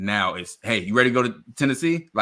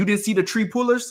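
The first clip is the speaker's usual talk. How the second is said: put-on Irish accent, pitched very high; 13 semitones higher than usual. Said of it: "he has an Irish accent".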